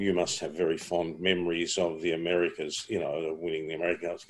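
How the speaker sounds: ordinary delivery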